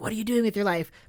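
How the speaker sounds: put-on, acted-out whisper. Acting out someone whispering into a friend's dream: acting out a whisper. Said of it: "go into Dez's dream and whisper to him".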